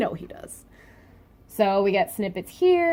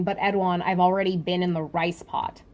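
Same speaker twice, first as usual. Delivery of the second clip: ordinary delivery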